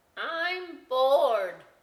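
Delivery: very loud, high talking-potato voice. Acting out a story, voicing a bored talking potato: talking like a potato. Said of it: "that's me talking like a potato".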